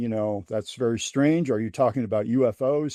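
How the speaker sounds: ordinary delivery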